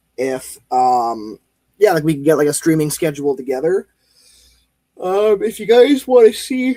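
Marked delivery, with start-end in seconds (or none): 5.0-6.8 words stretched by a loud, very high yawn. Streamer asks viewers what they want to see, yawning while talking. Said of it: "I don't know why I'm yawning".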